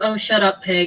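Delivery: quiet mumbling under the breath. Retelling a comeback to a man who scolded them, mumbled under breath.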